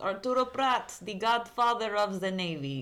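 slow, bad, put-on Russian accent. Jokingly naming a navy hero: put-on Russian accent. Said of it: "I don't know why I just turned Russian".

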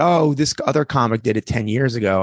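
ordinary delivery

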